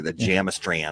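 put-on Minnesota accent. Mimicking how Minnesota folks would say a word, in a Minnesota accent.

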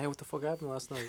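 mock frantic, high, panicky voice. Retelling a phone call the morning after blacking out: imitating own panicked call. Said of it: "I called Daniel panicking".

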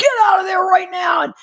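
put-on, very high-pitched, loud yelling. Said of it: "he started yelling at me".

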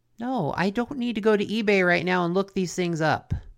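ordinary talk, nothing marked

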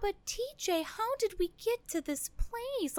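put-on, high, sickly sweet, delicate voice.

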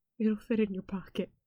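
put-on, soft, very sad, downcast voice. A speaker quotes a line from Ham, imitating Ham very sadly. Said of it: "very sadly says".

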